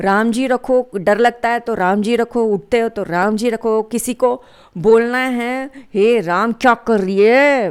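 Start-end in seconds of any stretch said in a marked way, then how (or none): 5.9-7.7 angry, scolding outburst. Example of telling someone off in hindi: angry tone. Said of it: "ऐसे बोलो, ऐसे लग गुस्से में आके।".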